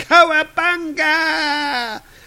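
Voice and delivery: high-pitched, slow, loud shout.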